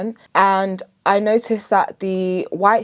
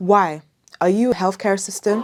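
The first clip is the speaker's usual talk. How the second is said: mock sassy, sarcastic, snarky tone. Retelling what two international nurses asked on placement, mimicking a sassy, sarcastic question. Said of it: "All sassy and sarcastic".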